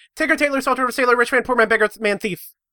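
rattled off in one go. Saying a long track name in one go on request: said really fast. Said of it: "And do it really fast".

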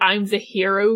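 ordinary delivery

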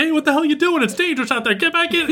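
mock teacher voice yelling, very high pitch. Retelling how a teacher in the window yelled at her: imitating a teacher yelling. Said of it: "yelling at her".

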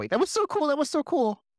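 bouncy, excited, gleeful delight, very high pitch. A player voices their character bouncing around after something cool, happy and excited. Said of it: "Emery's just bouncing around happily".

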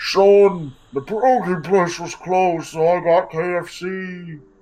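distant, very muffled, very drawn out, high voice. Voicing someone heard in the distance: very muffled voice. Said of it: "you hear a very muffled".

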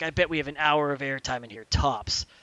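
mock-serious delivery. Retelling what teammate Caden said: retelling a very serious line. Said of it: "He's being very serious".

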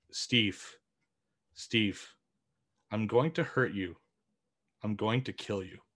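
hushed, threatening half-whisper. Telling the others about a dream, the speaker repeats what the voice said, imitating a half-whisper. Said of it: "It whispered".

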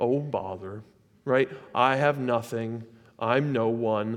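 slow, drawn-out, self-pitying delivery. Showing how false humility sounds, said like Eeyore. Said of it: "you have to say it like Eeyore".

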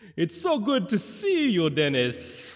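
swooping, high-pitched vampire character voice. Playing a guest on the final episode: Special Occasion Dracula voice. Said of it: "a visit from Special Occasion Dracula".

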